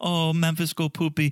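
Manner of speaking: mocking, put-on baby talk. Mocking how she talks to him: imitating Memphis's baby talk. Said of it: "talking like a baby".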